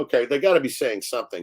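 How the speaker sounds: normal talking voice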